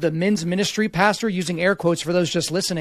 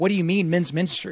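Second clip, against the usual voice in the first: ordinary talk, nothing marked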